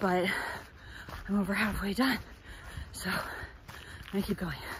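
slow, winded speech, puffing and short of air. Talking while running, over halfway done and pushing a bit; out of breath. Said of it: "so I'm pretty out of breath".

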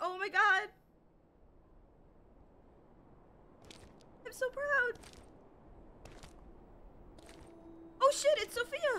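tearful voice. A streamer talks to chat after beating the game: crying, emotional. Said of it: "Sorry, I am crying, chat".

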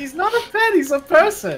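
very high put-on voice, pushed into falsetto. Retelling a prank call to a hotel in Deidara voice. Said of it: "doing the old Deidara voice for that too".

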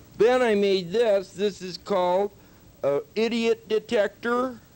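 high, relaxed, spaced-out voice. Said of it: "Like, hi. My name is Eric the Handyman".

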